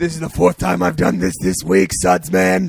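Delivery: rough, raspy, creaky put-on voice. Imitating Batman pulling a villain out of a dishwasher: imitating Batman. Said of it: "and he's like".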